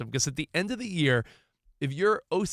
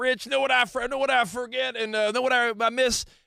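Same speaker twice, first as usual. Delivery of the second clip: put-on voice, slight Southern accent, much higher, slower; 8 semitones higher than usual. Telling a co-host about the father-in-law, imitating Dave. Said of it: "It's a little southern".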